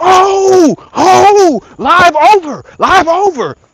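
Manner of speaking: very high frantic cry, oh stretched out. Retelling being stung while live, retelling a panicked shout. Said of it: "I was I was panicking".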